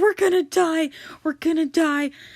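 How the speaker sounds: put-on panicked cry. Retelling a storm at sea, disciples panicking: imitating panicked disciples. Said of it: "losing their minds".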